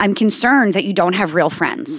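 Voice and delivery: ordinary talk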